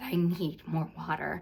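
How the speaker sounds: ordinary talk, nothing marked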